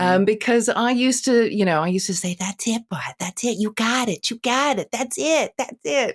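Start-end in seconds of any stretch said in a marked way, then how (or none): 2.4-6.2 encouraging, soothing, praising pet-talk voice. Retelling encouraging a dog, imitating own dog-talk voice. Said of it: "I'm still using that voice".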